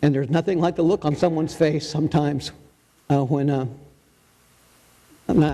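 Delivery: fast, emotional rush of words, emotion welling up. Speaker shares a personal belief with listeners, getting emotional. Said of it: "I know I'm getting emotional".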